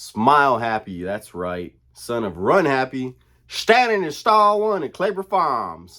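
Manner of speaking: loud, high, belted delivery swooping up and down. Talking about a Kentucky Derby horse, doing a Mattress Mac impression. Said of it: "my best Mattress Mac impression".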